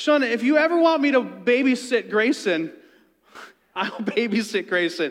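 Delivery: put-on friendly yell. As shauna walks away, a man yells out to her: retelling a man's yell. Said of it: "he yells out to her".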